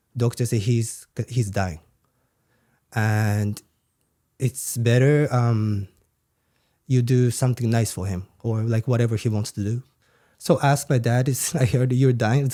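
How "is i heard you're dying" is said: laughing through the words. Retelling what was said to a dying father, laughing while talking. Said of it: "Sorry, I'm laughing".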